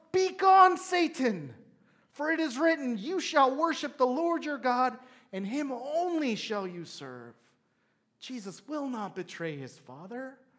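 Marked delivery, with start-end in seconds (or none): 0.1-7.3 loud, high, impassioned emotional shout. Retelling how he answers the temptation, retelling a shout. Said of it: "He shouts".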